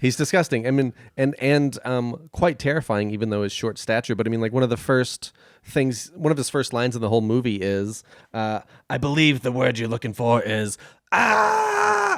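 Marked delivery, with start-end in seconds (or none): 8.9-12.2 slow delivery erupting into a swooping, long drawn-out ah. Quoting one of a villain's first lines in the movie: imitating Penguin yelling. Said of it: "forgive me for yelling just now".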